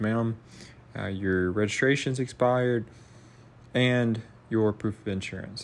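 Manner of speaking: normal talking voice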